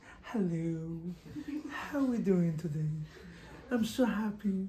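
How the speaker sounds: put-on soft, sugary, sweet, polite voice. Teasing the ladies about how they talk on a date: mocking a sweet date voice. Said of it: "you're speaking so nice".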